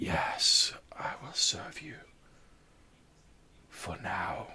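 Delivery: slow, unhurried, eerie spectral whisper. Voicing a shadowy creature answering a summoner: whispered spectral voice. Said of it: "this whispered voice".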